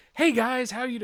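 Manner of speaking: acted, high, loud, over-the-top eager enthusiasm. Retelling how Frank greeted the panel audience: imitating Frank, voice-actor enthusiastic. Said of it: "he is voice actor enthusiastic".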